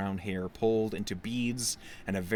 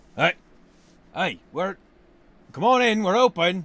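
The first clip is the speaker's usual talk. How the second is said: rough, gruff holler, very high and loud; 10 semitones higher, 11 dB louder than usual. A voice from inside answers a knock at the door, gruff. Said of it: "a gruff voice from inside".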